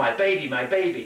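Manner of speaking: plain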